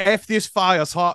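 put-on Australian accent. Showing that cursing doesn't count in an accent, using a put-on Australian accent. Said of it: "you just put on the accent".

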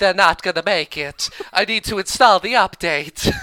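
put-on Southern belle accent. Act out a woman at the computer who needs to install the update, [name]'s Southern Belle accent. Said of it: "doing her Southern Belle accent".

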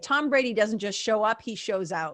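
plain

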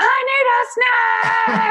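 put-on very high, very slow, drawn-out child's holler. Retelling how a five-year-old yells from the living room: imitating a child yelling. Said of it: "he's like yelling from the living room".

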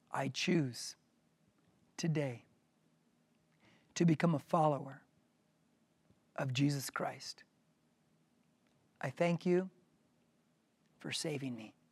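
slowly, with breaks. Leading listeners in a prayer to repeat after, slow with pauses. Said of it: "I'm going to say it slow with breaks".

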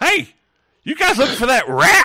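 booming, loud, high-pitched, animated call. Narrating as the listeners step into a room, a character calls out in a loud voice. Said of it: "you hear this loud voice".

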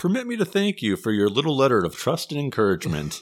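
put-on heavy sarcasm, high and sing-song. Retelling how the DA replied to them, mock-sarcastic. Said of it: "he was very sarcastic in his reply".

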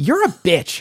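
mock cheerful, high, cheery tone. Retelling a customer's remark in a comic shop, imitating a cheery tone. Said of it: "and as cheerily as possible".

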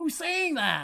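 high, baffled, confused voice.

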